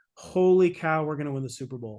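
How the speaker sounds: normal talking voice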